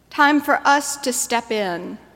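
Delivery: ordinary delivery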